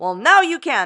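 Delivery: showy, loud, high game show host patter. A creator pitching an affiliate link repeats the line in their game show host voice. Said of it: "my game show host voice".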